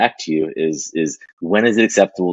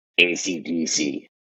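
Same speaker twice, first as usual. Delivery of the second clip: put-on raspy older woman voice, very slow and soft; 6 dB quieter than usual. Retelling how an older woman answered when given a choice, in a raspy voice. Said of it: "she says with a real raspy voice".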